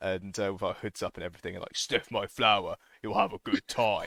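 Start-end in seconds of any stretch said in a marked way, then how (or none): 1.8-4.1 weird put-on voice, slower. Retelling ambushing people in Murder Alley with hoods up, in a deliberately weird voice. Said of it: "we deliberately say it in like a weird voice".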